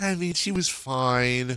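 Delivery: slow, offhand, dismissive tone. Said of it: "the one guy that was like".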